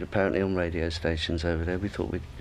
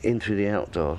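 usual speaking voice

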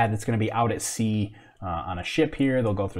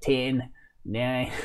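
bad, terrible put-on Australian accent; 3 dB quieter than usual. Trying an australian accent the best they can, terrible australian accent. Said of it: "I'm going to do an Australian accent the best I can do".

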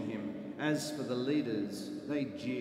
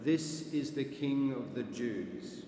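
ordinary delivery

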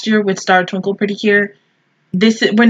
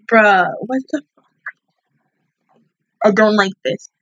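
nearly crying, holding back tears. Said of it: "I'm trying not to cry, though I am".

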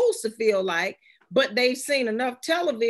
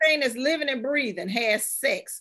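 normal talking voice

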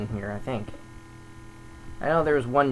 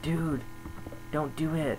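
soft, hushed whisper dropping to a murmur. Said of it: "some people are whispering to him".

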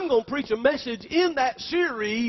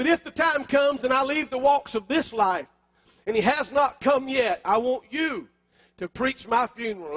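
ordinary talk, nothing marked

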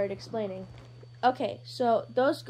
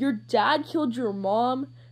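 startled, taken aback, surprised, rising tone; 5 dB louder than usual. Hizashi reacting to what Izuku just told him, surprised. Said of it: "surprised just like Shota".

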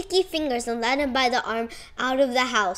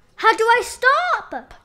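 very high, very slow, alarmed cry; 10 semitones higher, 6 dB louder than usual. Reading a story, the narrator voices a character speeding down a sidewalk, crying out in alarm. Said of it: "Cried Cat".

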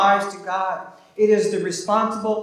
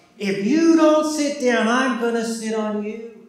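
put-on angry yell, furious yet mild; 3 semitones higher than usual. Telling a story, quoting a babysitter yelling at a boy: retelling an angry yell. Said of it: "yelled at the top of her lungs".

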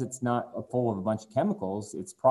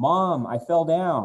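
put-on child voice, high and loud yelling; 7 semitones higher, 6 dB louder than usual. Describing a TV commercial, voicing the kid in the background: imitating a kid yelling. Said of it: "you can hear the kid in the background yell".

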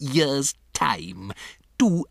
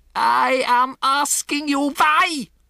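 very high, deliberate, drawn-out shriek; 13 semitones higher, 4 dB louder than usual. A woman demands an answer from an audience that stays silent; screaming. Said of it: "she screamed".

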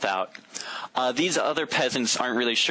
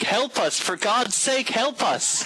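very high, screamed-out cry; 11 semitones higher than usual. Voicing a fleeing peasant as orcs approach: screaming out for help. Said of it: "one of them screams out".

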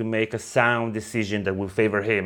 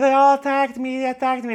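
high, blubbering, sobbing, tearful crying voice; 5 dB louder than usual. Discussing a book chapter, the speaker acts out a prince complaining; mock crying. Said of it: "And he's like crying".

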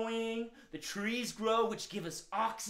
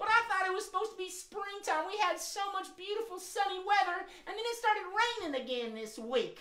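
cranky, grumpy tone, pitched very high; 9 semitones higher than usual. Bob Rabbit complains after being told not to be surprised by rain, cranky. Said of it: "you seem like you're kind of cranky today".

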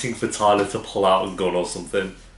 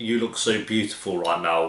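plain

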